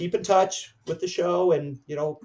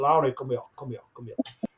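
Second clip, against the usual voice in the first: put-on German accent, spoken more quietly; 2 semitones lower, 4 dB quieter than usual. Retelling being called over by the teacher, in Lou's German accent. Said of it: "He never lost his German accent".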